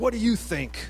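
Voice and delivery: nasty, ugly-voiced tone. Retelling how a woman at the window answered the speaker's question, in her ugly voice. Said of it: "with this ugly voice says".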